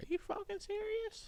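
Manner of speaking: very high, squeaky, disbelieving outburst. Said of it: "And I was like".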